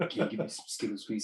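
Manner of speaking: very quiet, breathy, near-whispered cartoon voice. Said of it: "sounds like Grunk from Crudes".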